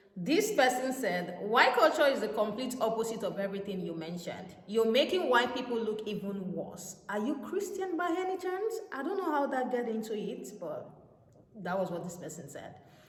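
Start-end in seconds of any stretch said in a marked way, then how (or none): none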